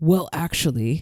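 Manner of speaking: put-on brutal voice. Mocking elitists who correct artists' directions: imitating a brutal voice. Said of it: "in a brutal voice".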